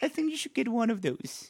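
very high, sweet and polite voice. Retelling what she said to her mommy, in a sweet voice. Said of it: "with this sweet voice".

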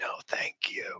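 whispered, breathy. Retelling an airport encounter: Clint Eastwood impression. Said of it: "he did that with that same voice".

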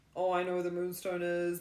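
normal talking voice

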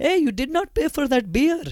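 put-on Indian accent, yelled very high. Imagining confronting someone robbing a store, the speaker yells in an Indian accent. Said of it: "they're using an Indian accent".

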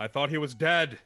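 put-on shouting. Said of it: "Brunschlager is going to just yell".

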